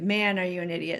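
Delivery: normal talking voice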